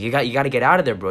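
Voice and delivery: acted-out scared screaming. Retelling what the fireman shouted to the man lying there, retelling a scared scream. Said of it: "He's like screaming".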